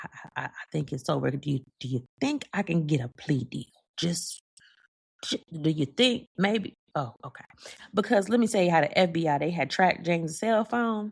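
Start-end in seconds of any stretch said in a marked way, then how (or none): 0.0-6.8 hushed whisper, under the breath. Imagining leaning over to their attorney, the speaker whispers. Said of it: "leaned over to my attorney and whispered".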